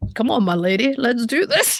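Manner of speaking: speaking as an animal's inner voice. Speaker talks for the animal, picturing what's in his head: voicing the animal's thoughts. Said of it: "you have the same voice when you talk for him".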